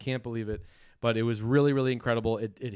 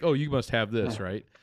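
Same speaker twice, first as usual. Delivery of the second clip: put-on casual, offhand, nonchalant manner. Retelling a comic seller's reply: imitating someone nonchalant.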